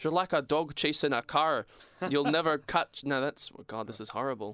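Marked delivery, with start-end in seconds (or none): 0.0-3.0 loud put-on Scottish accent. Imagining a Scottish dad giving his son advice, imitating a Scottish accent. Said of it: "being from Scotland".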